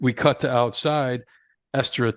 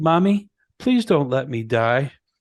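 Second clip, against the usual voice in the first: put-on swooping, sing-song, pleading child voice; 3 semitones higher, 3 dB louder than usual. Retelling a film scene where a character pleads in a child voice: Esther's child voice. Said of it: "the child voice she was using".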